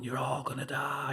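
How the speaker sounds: mild, half-yelled, ranting shout. Retelling a fight where others pushed the speaker away: retelling a shout. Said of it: "I was shouting".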